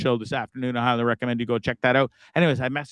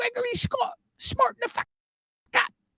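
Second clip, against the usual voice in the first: very high, put-on British mother scolding voice; 4 dB quieter than usual. Imitating mum scolding by full name: put-on british accent, yelling. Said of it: "She's got this accent and she's always yelling at you".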